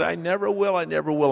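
high, put-on sobbing, tearful pleading tone. Retelling promising never to do it again: imitating crying while pleading. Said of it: "I'm crying".

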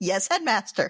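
ordinary delivery

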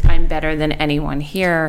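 ordinary talk

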